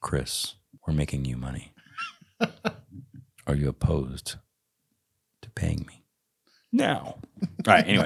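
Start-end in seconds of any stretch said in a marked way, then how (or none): 0.0-6.0 put-on, swooping late-night FM radio DJ voice. Asking about being paid for bringing in money, in a late-night FM DJ voice. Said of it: "Put on my late night FM DJ voice".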